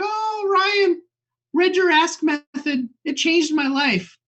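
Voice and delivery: very high, starstruck, gushing superfan voice. Describing fans messaging a man on LinkedIn, imitating a gushing fan. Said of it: "can we do the rest of the podcast in that voice?".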